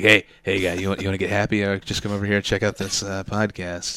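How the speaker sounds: put-on shady street voice. Mocking a podcast slogan by pitching it as a street-corner drug dealer. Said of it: "I'm slinging drugs on a street corner".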